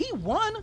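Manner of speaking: very high-pitched voice, pushed way up. Talking about Pettis winning while out of shape, high-pitched voice. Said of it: "the reason why I'm saying it with this high pitched voice".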